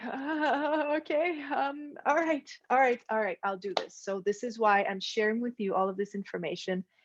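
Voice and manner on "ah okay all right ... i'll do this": high, weepy, tearful crying with long ah. Retelling a reply to an inner voice: retelling own crying reply. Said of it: "I was just kinda crying, going like".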